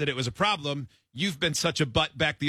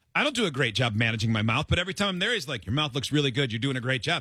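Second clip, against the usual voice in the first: ordinary talk, nothing marked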